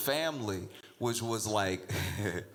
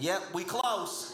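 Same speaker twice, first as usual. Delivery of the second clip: high-pitched shouted calling out; 9 semitones higher than usual. Retelling passengers calling to each other while landing: imitating someone yelling. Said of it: "they were yelling".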